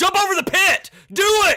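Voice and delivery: high, loud, impatient yelling.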